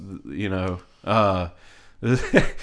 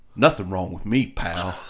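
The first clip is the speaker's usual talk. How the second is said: low, flat, put-on dead-serious deadpan; 5 semitones lower than usual. Retelling a guy's reply in a fight over one seat, imitating deadpan seriousness. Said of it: "He got deadpan serious".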